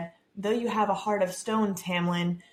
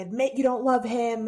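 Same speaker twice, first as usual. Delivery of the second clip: put-on screaming; 4 semitones higher, 3 dB louder than usual. Retelling a book scene where one character screams at Feyre, retelling a scream. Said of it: "she's like screaming at her".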